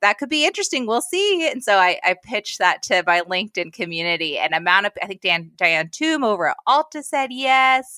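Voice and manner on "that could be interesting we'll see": high-pitched, doubtful, noncommittal tone. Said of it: "And she was like".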